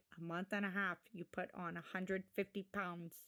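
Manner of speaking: low, flat, level deadpan with zero reaction. Retelling what the doctor said to a patient: deadpan Doctor Now impression. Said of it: "he's just so deadpan and boring".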